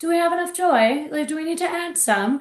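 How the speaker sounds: put-on British accent. Retelling a monthly joy meeting with a drink in hand: put-on British accent. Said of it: "almost in, like, a British accent".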